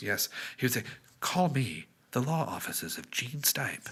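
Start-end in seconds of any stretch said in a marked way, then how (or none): 1.2-3.9 slow, easy, very soothing voice. Recalling what a man would say on his commercials, in Gene Stipe's very soothing voice. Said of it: "had a very soothing voice".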